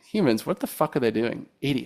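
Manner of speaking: put-on thoroughly fed-up, cynical, exasperated scorn. Describing a show's cynical android who is annoyed by humans: cynical, exasperated Murderbot voice. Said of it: "he's very cynical. He's always just being like".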